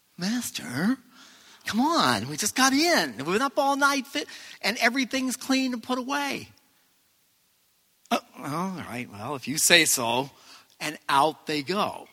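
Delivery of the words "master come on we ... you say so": put-on voice, pitched much higher. Speaker retelling Peter's answer to the Master, in Peter's tone of voice. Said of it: "you got to hear his tone of voice".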